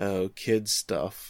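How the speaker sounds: slow, bored, disinterested tone. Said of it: "Conan's instantly disinterested".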